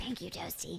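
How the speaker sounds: hushed, whispered demonic voice. Thanking the co-speaker after her remark; demon voice. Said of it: "I don't know why I said that like a demon".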